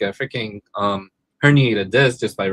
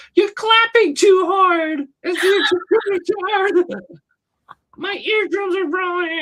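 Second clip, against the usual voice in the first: very high, entitled, demanding whiny complaining. Retelling what the Karen ladies at the show said: imitating an entitled Karen complaining. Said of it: "she's like".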